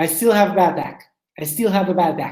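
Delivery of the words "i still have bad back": ordinary delivery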